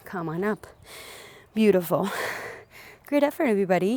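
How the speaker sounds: out of breath, winded. Instructor ends a squat exercise and praises everybody, out of breath. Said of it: "I am so winded right now".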